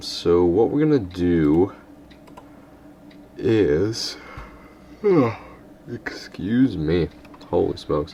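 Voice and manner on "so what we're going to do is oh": very slow, words stretched through a yawn. Speaker who was out all night starts explaining the plan, yawning while talking. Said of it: "sorry about all the yawning".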